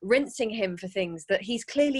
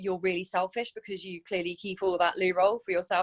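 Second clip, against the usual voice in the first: normal talking voice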